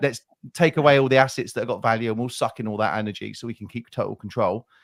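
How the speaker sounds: normal talking voice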